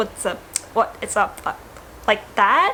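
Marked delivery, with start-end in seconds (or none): 0.0-1.4 disorganized, stammering, stuttering speech. Explaining how someone may stutter when speaking up, stuttering. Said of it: "you may stutter a little bit".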